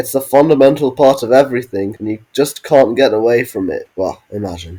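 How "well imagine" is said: much quieter, much lower. Reading a part in brackets, the speaker drops into a quieter voice. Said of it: "I did speak that in a quieter voice".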